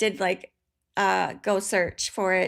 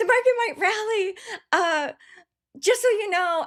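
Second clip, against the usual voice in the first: mock eager, excited, very high-pitched voice; 11 semitones higher than usual. Retelling a trading friend sharing market news: imitating an excited friend. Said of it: "He just was so excited to tell me the news".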